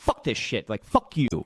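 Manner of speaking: frustrated, fed-up, angry outburst. Acting out a frustrated investor cursing: acting out angry cursing. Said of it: "You start to get angry. You start to curse Mike".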